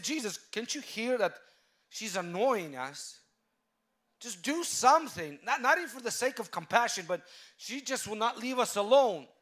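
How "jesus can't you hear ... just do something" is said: play-acted exasperated, irritated, put-out grumble. Retelling the disciples complaining to Jesus: imitating annoyed disciples. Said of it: "Disciples already got annoyed".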